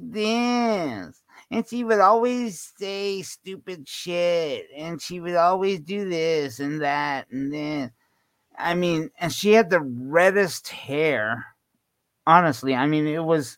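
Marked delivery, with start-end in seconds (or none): 0.1-7.9 put-on whiny girl voice. A speaker describing a girl, imitating her whiny voice. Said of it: "talked while whining i mean she would always talk like".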